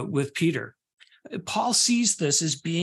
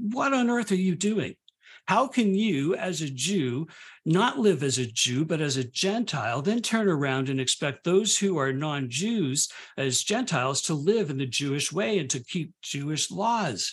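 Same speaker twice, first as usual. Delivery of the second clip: plain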